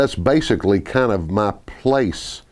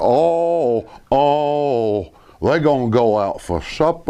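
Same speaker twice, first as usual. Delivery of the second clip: put-on North Carolina voice, slower pace; 3 semitones higher than usual. Showing how people from North Carolina talk, talk kind of like Andy Griffith. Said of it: "you talk kind of like Andy Griffith".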